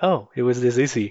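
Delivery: ordinary delivery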